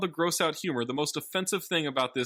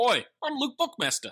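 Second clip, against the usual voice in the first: put-on Australian accent, pitched up; 8 semitones higher than usual. Asked for their best Australian accent, the speaker gives a go: put-on Australian accent. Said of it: "best Australian accent you can say".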